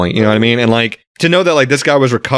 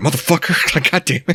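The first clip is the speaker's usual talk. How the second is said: mock mutter under breath, quieter and higher; 4 semitones higher, 4 dB quieter than usual. Retelling a scene from a book where a guy curses: retelling a muttered curse. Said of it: "Even under his breath".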